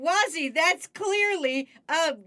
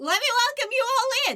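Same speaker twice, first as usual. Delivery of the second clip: squeaky, high voice breaking into a squeak; 9 semitones higher than usual. Streamer welcoming viewers at the start of the stream, squeaky voice crack. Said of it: "my voice squeaked like I'm going through puberty".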